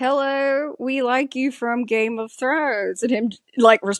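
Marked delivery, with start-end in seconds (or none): 0.0-3.0 slow, high, drawn-out, deliberate speech. Imitating fans greeting an actor they assume speaks no English: imitating someone talking slow. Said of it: "talk slow and be like".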